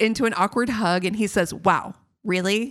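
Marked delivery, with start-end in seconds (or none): none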